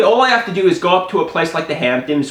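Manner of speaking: ordinary delivery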